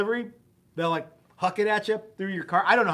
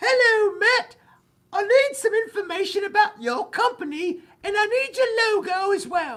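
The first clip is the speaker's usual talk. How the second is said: put-on, very high-pitched British woman's voice; 13 semitones higher, 3 dB louder than usual. Guessing how a young woman from the challenge website sounds, the speaker imitates a British woman. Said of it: "I'm assuming she sounds like this".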